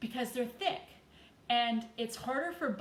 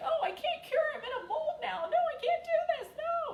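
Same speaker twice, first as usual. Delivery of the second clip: put-on shrieking squeal, very high. Speaker voices the resin being poured into a mold, shrieking in a put-on voice.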